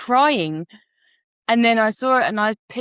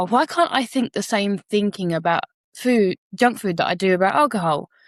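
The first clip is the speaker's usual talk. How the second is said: usual speaking voice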